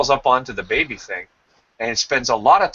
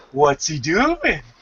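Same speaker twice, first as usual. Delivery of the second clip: put-on long, stretched, cooing baby-talk vowels; 5 semitones higher than usual. Imitating people asking questions about a baby, long drawn-out vowels. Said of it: "they sort of ask these questions in long drawn out vowels".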